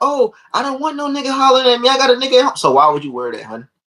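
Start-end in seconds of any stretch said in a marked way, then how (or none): 0.0-2.6 put-on girl's voice, pitched very high. Imitating a girl at the club rejecting dudes: imitating a girl talking. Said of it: "Then the girl will be like".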